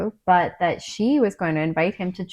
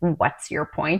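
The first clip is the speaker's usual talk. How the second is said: put-on snarling voice; 3 semitones lower than usual. Imagining someone snarling a line at them: imitating Andrew snarling. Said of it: "if Andrew snarled at me, like".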